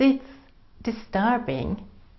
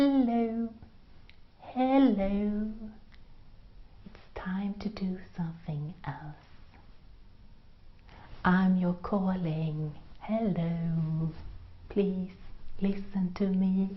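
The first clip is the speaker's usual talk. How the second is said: tiny, small, soft voice; 8 dB quieter than usual. Former H and M researcher recounts what she heard inside, in a tiny inner voice. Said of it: "I heard this tiny voice from inside start".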